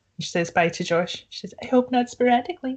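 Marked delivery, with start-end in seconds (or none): 1.6-2.8 put-on film-style American accent, pitched up. Quoting a film character's line: put-on american accent. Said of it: "That's my American accent".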